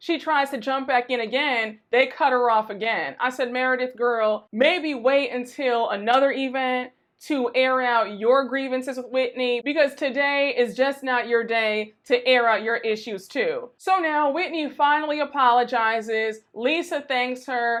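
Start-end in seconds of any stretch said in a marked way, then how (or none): none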